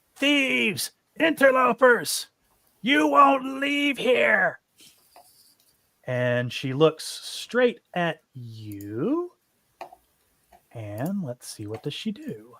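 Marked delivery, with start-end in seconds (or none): 0.2-4.6 livid, very high-pitched, shrill, furious shriek. Voicing a small frail woman bursting from a cabin: furious screaming witch. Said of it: "she looks livid, and she screams".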